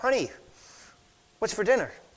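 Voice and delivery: normal talking voice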